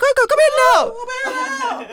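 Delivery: very high, very slow deaf-sounding voice. Retelling a parent calling across a shop, imitating mum's high-pitched deaf voice. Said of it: "she'd be using a deaf voice".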